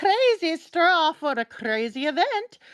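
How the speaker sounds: goofy put-on German accent. Mid-conversation, the speaker delivers a quick joke in a German accent. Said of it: "German accent".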